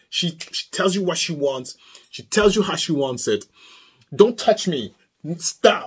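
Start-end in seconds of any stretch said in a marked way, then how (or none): 4.1-5.8 put-on firm, sassy, assertive girl voice. Describing a girl who says what she does not want, imitating a girl with attitude. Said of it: "Like she's like that".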